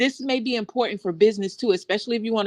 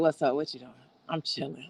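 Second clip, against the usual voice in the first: deep, soft, laid-back relaxed voice; 6 semitones lower, 8 dB quieter than usual. Showing how they sound when called on the phone, deep, low voice. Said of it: "Like my voice is so low".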